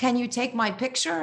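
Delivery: woman speaking with a put-on German accent. Retelling a story, the speaker quotes a woman on a bridge in some german accent. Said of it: "in some German accent?".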